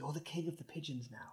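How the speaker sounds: very quiet, barely audible whisper. Playing a character who tells another player about the pigeons: whispering in character. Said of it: "Kinley just whispers".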